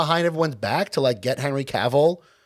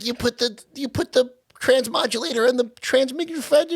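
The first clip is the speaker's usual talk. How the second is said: put-on New York accent, voice raised high; 8 semitones higher than usual. Discussing a movie, the speaker imitates baby Rocket's New York accent. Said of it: "still had the like New York accent".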